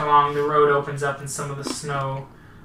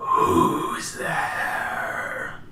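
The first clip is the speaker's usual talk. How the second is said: angry, spectral ghost voice. Narrating a game, voicing something heard in a ranger station: angry ghost voice. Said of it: "how much of that was ghost voice and how much of that was angry voice".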